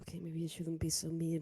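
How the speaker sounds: low, soft mumble muttered under the breath. A character at the ice cream counter mumbles to herself: mumbling to herself. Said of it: "kind of like mumbles to herself".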